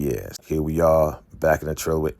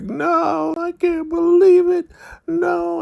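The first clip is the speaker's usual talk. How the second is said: very high, very slow acted weeping wail; 5 dB louder than usual. Retelling a show scene where a mother hears her daughter died: imitating someone crying and wailing. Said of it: "she starts crying and she starts wailing".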